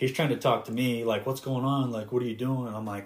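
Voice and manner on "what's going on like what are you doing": alarmed, frantic, panicked delivery. Retelling how a stressed friend in the right seat asked questions: imitating a panicked friend. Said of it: "He's, like, panicking".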